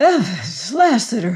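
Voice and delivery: out of breath, panting, gasping. Venters calls out to the newcomers as he catches his breath; panting. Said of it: "panted Venters when he caught his breath".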